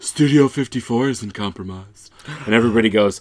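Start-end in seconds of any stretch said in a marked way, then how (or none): 0.0-2.1 sexy, breathy, breathed-out voice. Retelling a movie meeting scene, speaker voices a woman at the back: sexy breathy voice. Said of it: "a sexy, breathy voice from the back of the room say".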